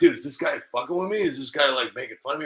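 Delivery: ordinary talk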